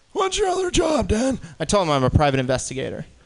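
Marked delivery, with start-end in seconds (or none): 0.2-1.4 put-on very high-pitched old man's voice. Retelling what an Uber passenger asked, in an old man impression. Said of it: "I'm in the middle of an old man impression".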